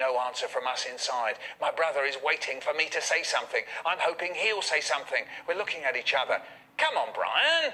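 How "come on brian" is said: very high, raised, mildly cross voice. Speaker retells his dad calling to Brian through the door, retelling Dad getting a bit cross. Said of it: "getting a bit cross".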